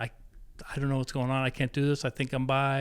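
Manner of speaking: mock-crying, distraught sobbing. Speaker retelling breaking down in the middle of the terminal, imitating own past crying. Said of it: "just crying, going".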